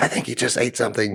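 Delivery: hushed whisper under the breath. Retelling whispering to the FTO back from dispatch, a retold whisper. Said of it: "I'm like whispering to him".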